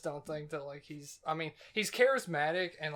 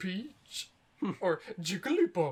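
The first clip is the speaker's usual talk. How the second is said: sugary, sweet, cutesy cute-character voice; 3 semitones higher than usual. Imitating how the announcer says feminine characters' names: imitating announcer's cutesy voice. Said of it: "he'll say 'em with, like, a cutesy voice".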